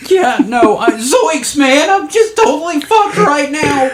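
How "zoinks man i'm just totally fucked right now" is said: cartoonish character voice pushed very high. Answering a co-host who points out the Shaggy Rogers voice. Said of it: "you dip into the Shaggy Rogers voice".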